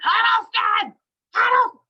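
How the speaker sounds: mock very high, shrill, loud mean yell. Speaker retells a mean woman who works there yelling her maiden name: imitating a woman yelling. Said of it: "she's really mean and she's yelling".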